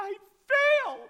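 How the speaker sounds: mock shrill crying wail, very high and loud. Retelling her answer when asked what was wrong, imitating someone crying. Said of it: "And she's just crying".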